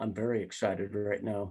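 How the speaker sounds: put-on lifeless, expressionless, inorganic monotone. Imitating someone who answers a greeting: imitating a flat, inorganic person. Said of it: "seems rather inorganic".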